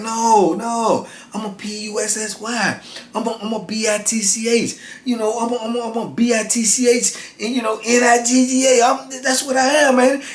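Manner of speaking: measured, deliberate, step-by-step talk. Retelling how Marty talked to the man in the corner: imitating slow, methodical talking. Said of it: "Marty talking so slow and methodical".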